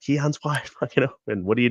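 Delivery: put-on high-pitched, frustrated yelling. Speaker retells yelling from the fifty-yard line about an open receiver, retelling a yell. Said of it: "I'm you know yelling from the fifty yard line".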